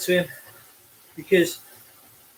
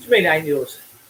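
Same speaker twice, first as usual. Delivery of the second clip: ordinary delivery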